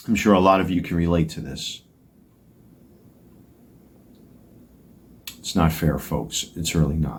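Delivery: getting choked up, voice choking with emotion. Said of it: "I'm already starting to get choked up here".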